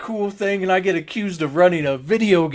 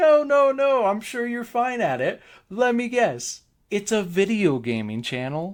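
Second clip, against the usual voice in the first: mock tone, giggling and laughing through the words; 3 semitones higher than usual. Speaker acts out a woman's reply after asking why she laughed: imitating her giggling while talking. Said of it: "still giggling".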